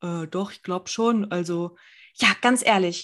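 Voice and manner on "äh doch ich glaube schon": sheepish, cowed, meek little voice. Retelling a quarrel over a window seat, the speaker acts out the boyfriend's answer; imitating a sheepish reply. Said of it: "der Freund war so voll kleinlaut".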